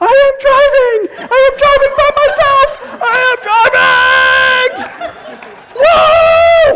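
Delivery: elated whooping yell, very high and slow. Recalling first driving alone on Route 11, retelling a joyful scream. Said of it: "screaming like".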